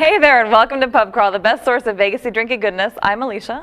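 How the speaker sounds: really fast, rattled-off delivery. A podcast host opens the show and introduces herself, said really fast. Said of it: "I said it really fast".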